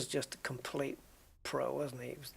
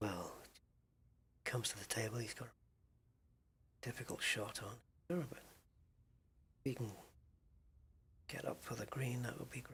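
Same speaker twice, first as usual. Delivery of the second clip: low, hushed, soft, slow delivery; 4 semitones lower, 14 dB quieter than usual. Imitating the snooker commentator Whispering Ted Lowe: imitating Ted Lowe's low voice. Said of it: "he just had a really low voice".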